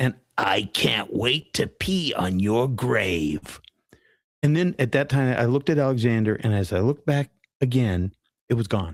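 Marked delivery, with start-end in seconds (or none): 0.0-3.6 deep, gravelly voice dragged out very slow. Recounting what a being only they noticed said to them, in a deep gravelly voice. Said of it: "Deep, gravelly voice".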